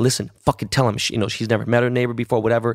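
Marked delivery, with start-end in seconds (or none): none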